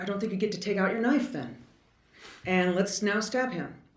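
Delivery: scoffing, ironic, mocking sarcastic delivery. Arguing about when deadly force must stop, sarcastic. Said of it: "I'm being sarcastic and I apologize".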